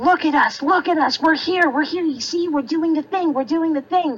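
put-on, high, insistent, in-your-face screaming. Speaker contrasts a show with Andy Mack, acting out mock screaming. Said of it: "It's not like they're screaming".

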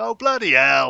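very loud, rough, hoarse, high over-the-top shout. Retelling what an actor says in several films: Barry Evans impression. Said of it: "he goes, "Oh, bloody hell," like that".

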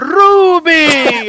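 put-on calling shout, very high, long and drawn-out. Retelling a film scene where the character calls back: imitating a shout. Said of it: "E aí ele grita".

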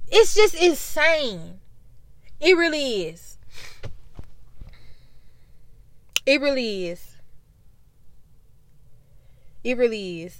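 emotional, choked voice. Talking about a cousin who was shot and killed: emotional. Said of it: "I'm a bit emotional".

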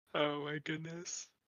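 words stretched through a yawn. In a conversation, speaking through a yawn. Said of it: "I'm sorry, I'm yawning".

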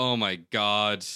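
put-on, loud, fed-up, exasperated exclamation. Retelling what another person said back then: imitating an exasperated reaction. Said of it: "It was definitely an exasperated".

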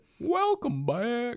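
high, loud, slight goofy Southern accent. Welcoming listeners back again: put-on slight southern accent. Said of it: "that was also kind of a Southern accent".

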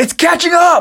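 shrill, very high, loud scream. Recapping a scene where characters yell out, retelling Eld screaming out. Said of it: "And then Eld screams out".

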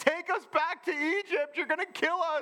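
put-on yell, shrill and pitched very high. Retelling the Israelites yelling at Moses: imitating people yelling. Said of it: "they're yelling at Moses".

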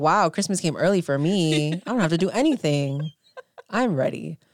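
put-on gleeful voice. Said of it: "having a holly jolly old time".

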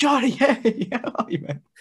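very loud, over-the-top, high-pitched hail. Telling how he'll greet a man he calls johnny, with a really loud greeting. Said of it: "really loudly just be like".

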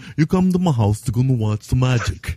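mushy, mushmouthed delivery, words mushed together. Joking about a professor who looks like Alan Moore: mushmouth Alan Moore English accent. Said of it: "my mushmouth Alan Moore English accent".

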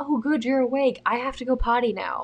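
voice of an imagined dog. Retelling being woken by a big dog standing on her: voicing the dog's imagined words. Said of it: "he's like".

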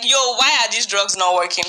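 usual speaking voice

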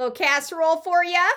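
high Minnesotan accent. Joking about having sounded Minnesotan, the speaker does a Minnesotan accent. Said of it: "boy i sounded minnesotan then huh".

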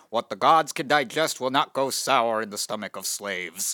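put-on old 1950s recorded-voice style impression. Quoting a film character's line to the Egyptians, in a 1950s recording voice. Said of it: "I'll do my best 1950s being recorded voice".

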